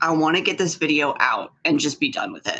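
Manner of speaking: ordinary talk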